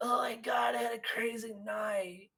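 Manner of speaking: put-on very hushed, soft, worn-out, hungover party-girl voice.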